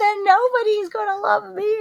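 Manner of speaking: mock lovelorn, very high, whiny voice.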